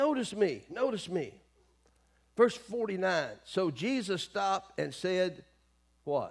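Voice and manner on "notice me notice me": put-on yelling, kept small and quiet. Retelling a man calling out to Jesus: imitating someone yelling. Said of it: "he keeps yelling".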